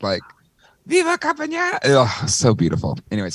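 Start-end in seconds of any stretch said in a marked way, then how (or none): 0.9-1.8 strained, very high announcer cry, voice cracking. Retelling the announcer's call again: imitating an announcer losing his voice. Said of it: "he's losing his voice as he's trying to say it".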